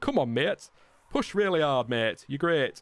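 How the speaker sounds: odd, weird put-on northern English accent. Pretending to radio encouragement to a racing driver, in a weird northern accent. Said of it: "I don't know why I've gone all weirdly northern".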